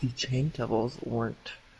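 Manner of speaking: reluctant speech through gritted teeth. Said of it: "through gritted teeth".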